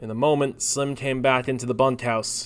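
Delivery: ordinary delivery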